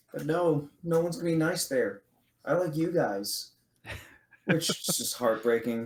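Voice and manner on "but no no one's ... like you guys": put-on childlike voice of a young kid. Retelling a character's lines to a co-host, imitating a young kid's voice. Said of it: "it's just like the kid voice".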